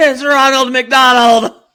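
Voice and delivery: put-on very loud, very high, shrill kid's shriek. Acting out a kid spotting a clown, imitating a yell. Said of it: "Just yelled like".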